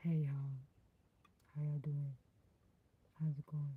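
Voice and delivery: very deep, low put-on voice. Testing a voice live, greeting viewers to Terryland in a real deep voice. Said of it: "Does it does it sound real deep when I talk like this?".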